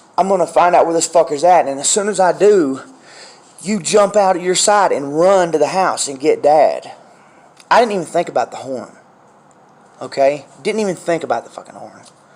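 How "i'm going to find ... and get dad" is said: ordinary talk, nothing marked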